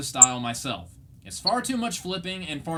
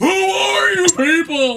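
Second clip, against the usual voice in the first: shrill, drawn-out scream, very high and very loud; 12 semitones higher, 10 dB louder than usual. Joking that the show felt like a screaming bewildered cartoon: imitating Patrick Star screaming. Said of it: "he's just screaming".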